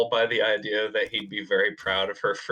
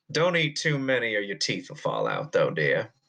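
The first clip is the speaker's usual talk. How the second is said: put-on folksy American Southern accent, swooping sing-song. In a game, a rogue trader character speaks to a player, in a Southern accent. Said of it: "We Meet a Southern Rogue Trader / told him the Emperor's dead yet. / We Meet a Southern Rogue Trader / you do that, miss. Okay, I need to. I need to reevaluate some things. If if you push the red butt".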